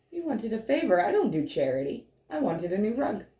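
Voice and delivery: storybook witch character voice. Retelling what Baba Yaga said about the rug: Baba Yaga voice. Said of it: "And Baba Yaga goes".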